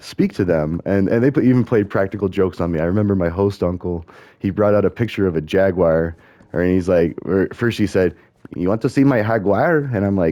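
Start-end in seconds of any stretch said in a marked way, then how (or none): 8.6-9.8 put-on heavy-accented English, higher pitch. Retelling a host uncle's joke in broken English: imitating host uncle's heavy accent. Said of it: "he had the very heavy accent".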